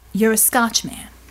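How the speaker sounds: ordinary delivery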